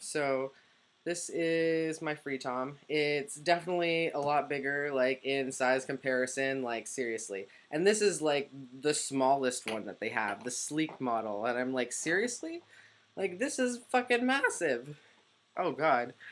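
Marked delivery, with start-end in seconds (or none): 11.9-16.1 very high voice, cracking and breaking up. Talking about the size of something they own, voice cracking. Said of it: "my voice is cracking".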